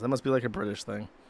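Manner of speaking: ordinary talk, nothing marked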